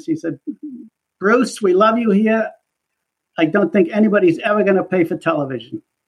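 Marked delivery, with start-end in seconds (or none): 1.2-5.8 put-on New York accent, higher pitch. Retelling what the woman who ran the department said when you resigned, imitating her New York accent. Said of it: "she said in her New York accent".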